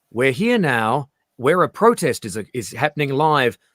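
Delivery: live news reporter delivery. Retelling a news clip from Perth: imitating a newscaster. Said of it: "a newscaster going down".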